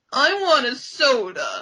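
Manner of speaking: whiny, swooping, drawn-out delivery of soda. Recapping a scene where Eric comes to comfort Pizzazz, imitating Pizzazz's whiny voice. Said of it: "in the whiniest voice ever".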